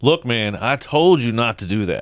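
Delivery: very loud, stern, firm dad voice. Parent showing how they talk to their child, dad voice. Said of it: "I wasn't afraid to use my dad voice".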